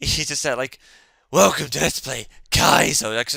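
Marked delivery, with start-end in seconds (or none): 1.3-3.1 loud, proper, raspy voice. Describing a Let's Play video's opening, doing its host's proper raspy voice. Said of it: "he's got this like proper raspy voice".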